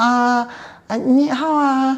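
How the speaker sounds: very high, very slow, learner's Chinese.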